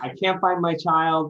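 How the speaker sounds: high-pitched yelling at the top of her lungs. Retelling a wife yelling in a store for a lost child: imitating someone yelling. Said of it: "she was just yelling".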